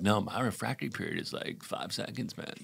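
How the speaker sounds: soft, creaky, bragging guy voice.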